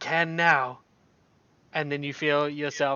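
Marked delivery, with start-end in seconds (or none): 0.0-0.8 hushed, half-whispered dragon voice. Voicing a hidden dragon answering a player's question: half-whispering dragon. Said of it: "There's a whisper again".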